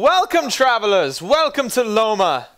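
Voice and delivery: very loud, slow, high-pitched shout. Voicing an elderly couple greeting travelers at the gate: shouting a welcome. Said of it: "and they shout".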